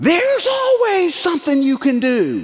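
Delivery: very high, swooping, goading yell. Retelling a shout from the ledge above: imitating Aaron yelling. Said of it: "he yelled down at me".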